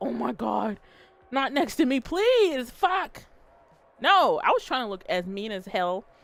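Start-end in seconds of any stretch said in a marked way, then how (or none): 0.0-3.2 scared, frightened pleading tone, pitch rising slowly. Retelling own thoughts as a stranger picks a seat: imitating own scared pleading. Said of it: "And I was so scared".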